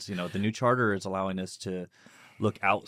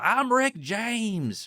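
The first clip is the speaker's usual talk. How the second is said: play-acted, very high, loud full-throat shout; 5 dB louder than usual. Retelling a man on a balcony announcing himself at night: imitating a loud shout. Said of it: "loud as he could be".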